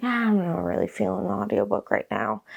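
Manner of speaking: usual speaking voice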